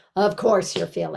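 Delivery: heated, worked-up, revved-up angry delivery. Showing an unhelpful way to respond, in a revved-up angry tone. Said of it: "like in this um, revved up, angry tone".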